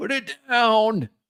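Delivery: put-on elderly man's voice, pitched very high. Telling someone dangling the package to put it down, in an old man's voice. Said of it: "An old man's voice".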